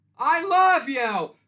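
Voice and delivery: very loud, high-pitched shout, belted out. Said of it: "Nailed it".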